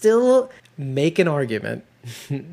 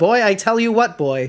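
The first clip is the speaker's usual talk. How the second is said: put-on accent of the American Northeast; 5 semitones higher, 4 dB louder than usual. Retelling a character's line from one episode, the speaker quotes it: Northeastern accent. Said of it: "in my stupid Northeastern accent".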